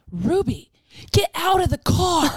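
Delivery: put-on scream. Retelling a phone call with someone whose car is smoking, reenacting screaming at her. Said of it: "I'm like screaming at her".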